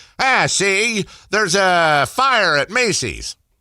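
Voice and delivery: 1920s reporter style, high. Showing another speaker how to talk: old-time 1920s reporter style. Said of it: "talk in the style of old-time nineteen twenties reporters".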